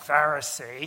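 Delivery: contemptuous, spat out with disdain. Showing how people say the word today, 'Pharisee' spat out with disdain. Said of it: "we kind of say it with disdain and sort of spit out the salt of our mouth".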